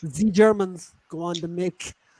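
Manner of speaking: very slow, put-on German accent, z for th. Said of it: "Shabby said Z".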